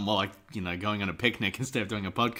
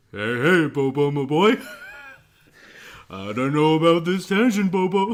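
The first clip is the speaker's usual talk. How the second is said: booming, high-pitched, swooping delivery; 7 semitones higher, 9 dB louder than usual. Responding to Nick's tangent, doing a Yogi Bear voice. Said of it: "You do a really good yogi".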